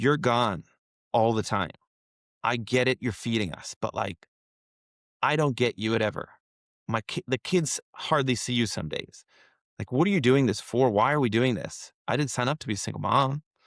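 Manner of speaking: ordinary delivery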